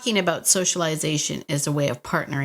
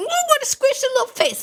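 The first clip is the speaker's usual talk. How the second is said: squeaky, very high cooing voice; 4 dB louder than usual. Recalling seeing a picture of the other person's dog, in a high-pitched voice. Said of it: "I got high pitched voice and I was like".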